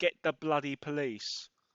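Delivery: ordinary delivery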